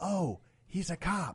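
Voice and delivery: put-on whispering. Telling a story about a queue, imitating a woman who whispers down low, retelling a low whisper. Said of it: "she whispered down low".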